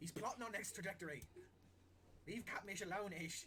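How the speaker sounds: high, loud scolding shout.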